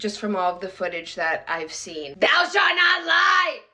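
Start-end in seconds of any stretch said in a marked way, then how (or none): 2.2-3.5 sloppy, tipsy, slurred put-on drunk voice. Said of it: "This is my impression of [name] drunk".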